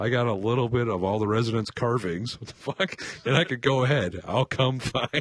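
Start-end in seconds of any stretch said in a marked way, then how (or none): none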